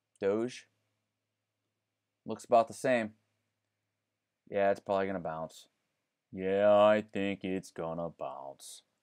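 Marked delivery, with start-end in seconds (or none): 6.3-8.8 downcast, slow, drawn-out mopey cartoon donkey voice. Going over crypto charts for viewers, the speaker answers himself: Eeyore voice. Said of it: "says Eeyore".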